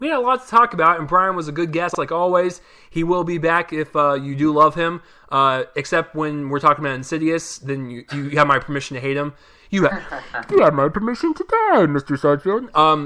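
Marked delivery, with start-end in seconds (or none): 10.5-12.8 bad, swooping villain voice. A podcast host closing out about a guest, in a terrible Bane impression. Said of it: "that was a terrible Bane impression".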